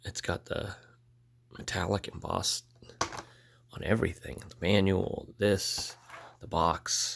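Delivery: sick voice, partly whispered.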